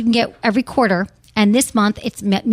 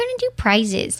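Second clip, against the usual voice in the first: playful put-on Michigan accent, pitched up; 7 semitones higher, 4 dB quieter than usual. A host addressing listeners, Michigan accent. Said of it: "I just did my Michigan accent".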